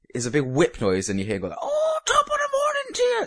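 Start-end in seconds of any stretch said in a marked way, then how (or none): 1.6-3.3 mock, very high, shrieked scream. Describing a YouTuber's obnoxious video intro, imitating Jacksepticeye screaming at the microphone. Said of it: "screaming at the microphone".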